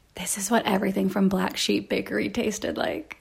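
quiet whispered voice. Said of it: "I'm gonna whisper it".

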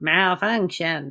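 mechanical, synthetic robot voice. Reacting to a robot on screen while watching a movie: robot voice. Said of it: "there's the robot voice".

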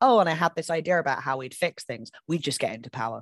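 plain

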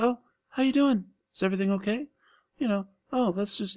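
plain, simple-sounding voice, high and fast. Describing an actor's rock gladiator character, imitating a simple, quiet voice. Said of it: "really simple, quiet voice".

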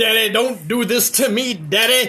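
acted, strung-out, desperate high begging. Retelling his son's reaction when asked about what he watched, imitating son like a crackhead. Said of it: "Like he was on crack".

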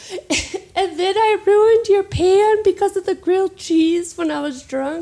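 high, loud mock crying through the words. Retelling making amends to a woman: retelling crying. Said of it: "And then I'm like crying".

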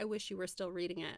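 ordinary talk

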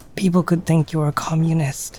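confiding, conspiratorial, secretive tone. Narrating a story, a man looks around, then speaks in a lowered voice. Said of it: "lowers his voice and says".

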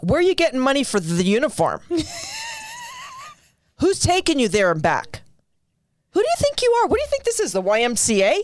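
high, swooping, disapproving scolding tone. Retelling own mom reacting to swim team news, imitating her disapproval. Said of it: "and then my mom would be like".

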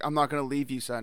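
ordinary talk, nothing marked

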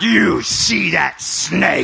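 suddenly deep, very loud, low voice. Retelling a woman with her Bible when the stepdad got sick: imitating her deep voice. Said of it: "Suddenly her voice gets deep".

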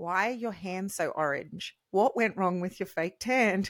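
quiet, soft, hushed delivery. Reminding someone what they asked in private at lunchtime, retelling a quiet question. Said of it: "You then said quietly".

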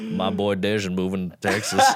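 put-on southern twang. Describing a comedian from Austin, speaker mimics him: imitating a southern twang. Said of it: "He's got like a fucking southern twang".

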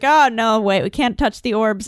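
plain

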